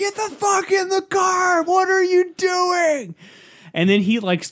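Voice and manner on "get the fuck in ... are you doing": very high, drawn-out scream. Retelling what a man's wife screamed at him from the car, imitating a woman screaming. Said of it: "She's screaming".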